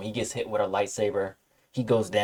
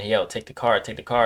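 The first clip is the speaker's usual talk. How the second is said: normal talking voice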